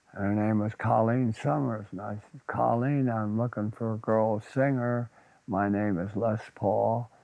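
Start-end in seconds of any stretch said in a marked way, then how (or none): none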